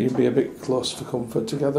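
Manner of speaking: ordinary talk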